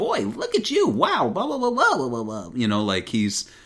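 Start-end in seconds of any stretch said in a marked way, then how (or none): 0.0-2.5 brash, high-pitched swagger. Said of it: "he's a little more cocky".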